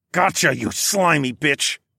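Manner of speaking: words growled out. Spotting the creature's scales in the crack, the narrator shouts at it, growling. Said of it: "I growled".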